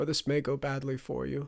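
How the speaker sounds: usual speaking voice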